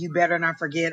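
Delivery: normal talking voice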